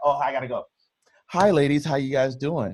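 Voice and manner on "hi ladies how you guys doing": mock courteous voice, suddenly turning polite and proper. Retelling joining a podcast at twelve: switching to polite greeting voice. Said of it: "and I'm like".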